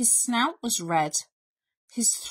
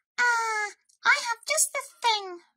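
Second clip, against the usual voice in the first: very high piping voice, announcer-like; 13 semitones higher than usual. Reading a story aloud, Mouse announcing to the weakening Bear: Mouse character voice.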